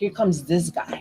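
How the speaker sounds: muttered under breath. Speaker retells what he said under his breath outside a store, muttered under breath. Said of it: "like under my breath".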